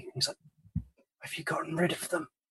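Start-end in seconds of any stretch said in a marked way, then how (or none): 1.2-2.3 feeble, weak, near-whispered voice. Game master voicing an injured character who sits up weakly: weak voice. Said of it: "he kind of sits up weakly".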